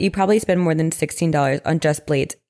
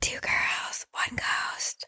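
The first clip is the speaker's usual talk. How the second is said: very soft, slow and deliberate whisper. Podcast co-host saying the show name after missing the intro, in a whisper. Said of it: "so I need to whisper".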